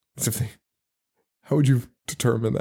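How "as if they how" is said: ordinary delivery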